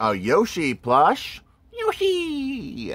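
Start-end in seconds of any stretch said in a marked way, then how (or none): 1.7-2.9 very high-pitched cartoon-style voice. Showing a Yoshi plush to viewers, doing a Yoshi impression. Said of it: "that's my Yoshi impression".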